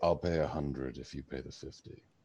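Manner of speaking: quiet whisper. Whispering to someone so that another man won't overhear; whispering. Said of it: "Whisper say".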